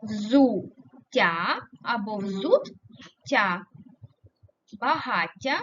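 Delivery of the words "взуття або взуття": very slow, взуття split into two parts. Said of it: "як ми перенесемо?".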